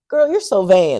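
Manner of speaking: loud, mocking, sarcastic teasing tone. Retelling what people would say whenever the speaker looked nice, imitating a sarcastic remark. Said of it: "like sarcastically".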